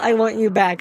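plain

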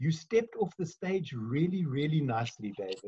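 understated, soft, quiet aside. Retelling what a friend said as the speaker walked past: imitating Mark speaking quietly. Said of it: "he just quietly said to me".

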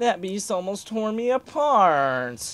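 put-on high, whining, complaining character voice. Voicing a character while still figuring out his voice, whiny character voice. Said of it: "he's more whiny than posh".

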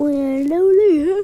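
said through a yawn. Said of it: "Sorry, that was a yawn".

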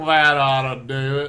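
put-on southern accent. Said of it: "It did sound like he had a southern accent there".

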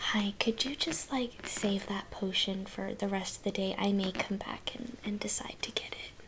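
soft, very quiet whisper, barely voiced. Asking a shopkeeper in character to hold a potion: whispering. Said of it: "I wanna whisper to her".

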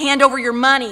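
mock hollering, acted out. Telling of a shop robbery, voicing the armed man: acting out a robber's holler. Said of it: "he hollers at him".

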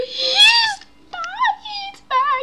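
high, loud panicked cry.

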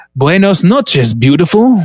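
fake Portuguese accent, poorly done. Reading a movie quote aloud: Jon Voight doing a bad Portuguese accent.

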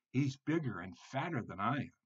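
plain

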